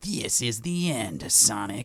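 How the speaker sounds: nasal, edgy nerd voice. Comparing how Shadow sounded to what she expected, in a nasal Shadow impression. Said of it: "there's a little bit of nasalness".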